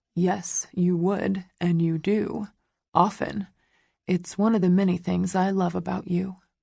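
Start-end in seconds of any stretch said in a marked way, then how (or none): none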